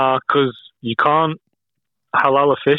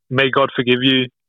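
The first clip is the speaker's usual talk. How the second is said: normal talking voice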